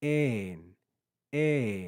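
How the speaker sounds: pitch on ein rising then falling. Showing learners how to say a greek word: pitch rising then falling on ein. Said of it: "You can hear my pitch rise and fall".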